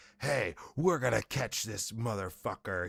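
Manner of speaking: super hot, fired-up, heated TV host delivery. Retelling how a crime show host came in, imitating a fired-up host. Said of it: "He would come in, like, super hot".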